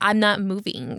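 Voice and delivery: ordinary talk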